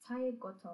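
ordinary delivery

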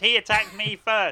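very loud, high, protesting yell. Voicing a character who accuses a player after a fight: shouting in character. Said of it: "She starts shouting".

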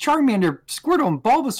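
put-on, very high, thrilled, super excited kid voice. Retelling the scene where the professor talks to Ash, imitating Ash's excited voice. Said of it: "he says it like really excited".

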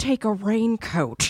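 put-on stricken, traumatized character voice. Quoting a wife telling her leaving son, impression of a traumatized wife. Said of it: "It's like my impression of her".

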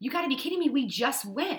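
mock fed-up, mad yell. Retelling getting mad at him at the fair, retelling a yell. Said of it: "I literally yelled at him".

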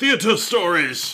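put-on high, slow, hammy old British theater actor voice. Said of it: "these old British, uh, crazy theater actors".

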